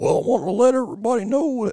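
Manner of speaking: country twang.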